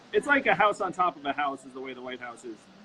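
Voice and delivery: ordinary delivery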